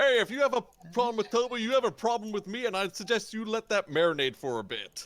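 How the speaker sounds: very high-pitched shouting. Voicing Gord defending Toby: yelling in character. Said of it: "Gord stands up and yells".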